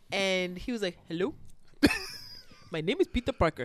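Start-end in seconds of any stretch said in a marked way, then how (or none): 1.1-3.6 put-on thick, strong Indian accent, pitched up. Retelling a telemarketer's call on speakerphone: imitating a strong Indian accent. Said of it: "strong Indian sounding accent".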